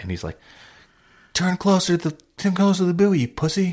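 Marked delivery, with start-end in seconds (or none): 1.3-3.7 very high, shrill screaming. Retelling how the captain on the boat yelled at him: imitating the captain screaming. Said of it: "screaming at me".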